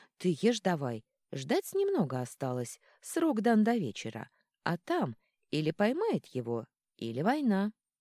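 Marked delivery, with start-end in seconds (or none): none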